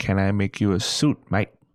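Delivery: plain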